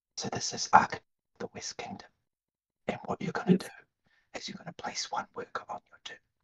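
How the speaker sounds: very quiet, hushed whisper. Acting out teaching a board game at a convention: whisper. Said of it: "after the whisper".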